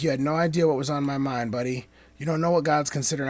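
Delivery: ordinary talk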